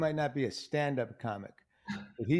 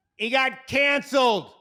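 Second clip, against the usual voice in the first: put-on very loud, shrill, piercing little kid's shout; 11 semitones higher, 9 dB louder than usual. Actor recounting what a little kid yelled out, retelling a kid's yell. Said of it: "this little kid just yells out".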